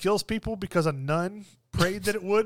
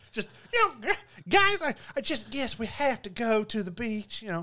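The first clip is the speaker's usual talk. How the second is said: put-on thick, heavy Southern accent, overdone; 3 semitones higher than usual. Imitating how a group of people talk, in a heavy Southern accent. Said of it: "heavy Southern accent".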